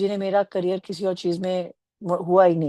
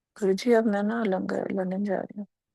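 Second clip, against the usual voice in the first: slow, drawn-out, soft murmur under the breath; 5 dB quieter than usual. Retelling how she spoke at Guruji's feet: slow mumble. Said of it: "इतनी स slow voice में बोला ... इस voice में मैंने mumble किया होगा".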